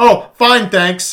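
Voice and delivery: mock snippy brush-off tone, high and very loud. Retelling how a rescued woman keeps answering her rescuer: imitating a snippety woman.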